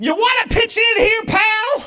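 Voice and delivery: mock very high, sudden, shrill shout. Speaker retells shouting at an unresponsive partner, retelling a shout. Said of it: "I just shout".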